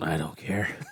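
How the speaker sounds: bored, apathetic tone. Retelling how they answered while lying across a table: imitating own bored reply. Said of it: "just laid across the table going".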